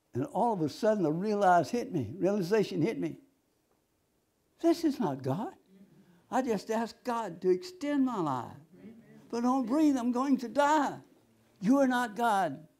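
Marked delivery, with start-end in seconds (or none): 11.6-12.5 intense, forceful, restrained and held-in cry. Retelling what was said to the deceiving voice: imitating own scream. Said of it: "When I screamed that".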